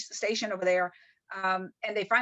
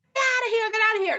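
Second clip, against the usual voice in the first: put-on screaming, higher and louder; 12 semitones higher, 6 dB louder than usual. Retelling how the chief screamed at the speaker on deck: imitating the chief screaming. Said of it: "he was just screaming at the top of his".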